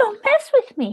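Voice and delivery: put-on tiny, very high-pitched little baby voice. Retelling what Kathy said back to them, in her little baby voice. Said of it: "with her little baby voice".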